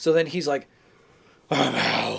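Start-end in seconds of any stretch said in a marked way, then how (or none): 1.5-2.2 deep, rough, gravelly bird-monster voice. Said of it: "make my voice all deep and gravelly".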